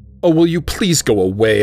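with a sigh. A narrator reads her own reply to an old woman begging at a bus stop, sighing. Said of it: "I sigh".

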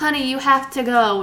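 put-on heavy, thick, laid-on Hungarian accent. Retelling a movie scene, quoting a character's mom in a thick hungarian accent. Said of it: "in her thick Hungarian accent".

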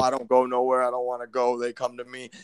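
put-on deep, low voice. Retelling a masked man talking about the men who come to him, put-on deep voice. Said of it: "the deep voice and he's all like".

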